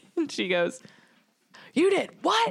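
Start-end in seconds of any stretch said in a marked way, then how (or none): 1.7-2.5 put-on shrill, piercing yell, very high. Retelling how she reacted when he said he joined the army, retelling her yell. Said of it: "she yelled also".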